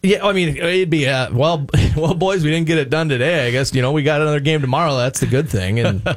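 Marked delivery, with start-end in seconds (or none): 1.3-5.8 mock resigned, deflated voice with shrugging resignation. Answering how the manager talks late in the season: imitating a deflated manager after a loss. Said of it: "what does he talk like in June".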